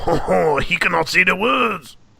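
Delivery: put-on French accent, high and slow. Joking about how people in france would say the words: mock french accent. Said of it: "throw that accent on it".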